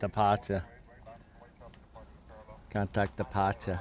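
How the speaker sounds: put-on Boston accent. Imitating the way a man says departure, in a Boston accent. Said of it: "Very Boston accent".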